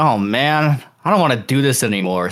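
ordinary delivery

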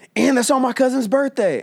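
very high-pitched, excited, blurted yell. Speaker retelling a moviegoer yelling during the trailers, retelling a moviegoer's yell. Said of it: "one of them yells".

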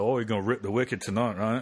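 put-on Cockney accent. Joking that a phrase sounds like Cockney slang: Cockney accent. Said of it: "it sounds like a Cockney thing".

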